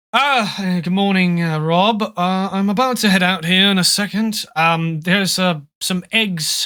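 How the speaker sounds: put-on British accent. The father lowers his newspaper and greets Rob, in Bartholomew's British accent. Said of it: "He's very British".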